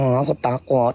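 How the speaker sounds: softened, nasal put-on voice. A storyteller acts out what someone said, in a soft nasal voice. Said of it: "Dia mau kasih halus dia punya suara tapi pakai suara hidung. Begitu bunyi".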